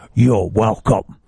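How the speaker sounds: dropped low, rough voice. Making the bus on time, the speaker imagines a voice in their head, voice of God. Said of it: "That's the voice of God".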